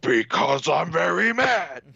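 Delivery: rough, creaky, gruff voice. Imagining the Beast in couples therapy, answering the therapist: Beast impression. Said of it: "that was my Beast impression".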